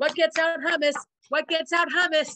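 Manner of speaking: mock frantic, high, loud, panicky. Recapping a Friends scene, frantic Ross impression. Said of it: "like Ross frantically".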